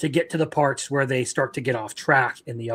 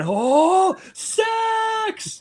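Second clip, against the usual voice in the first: put-on Japanese man voice, higher pitch. Retelling an anime scene, imitating the japanese man. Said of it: "Literally just like the Japanese man".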